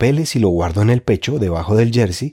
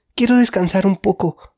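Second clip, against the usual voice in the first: very high-pitched, winded, breathless gasping, pleading; 10 semitones higher than usual. Being dragged and pushed along with two men running up behind, panting. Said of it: "jadeó".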